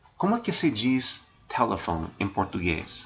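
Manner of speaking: ordinary delivery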